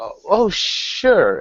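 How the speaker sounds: put-on slightly drunk, tipsy voice, high-pitched. Voicing a noble guest brought before the governor: slightly drunk Lady Swift. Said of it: "she's slightly intoxicated herself".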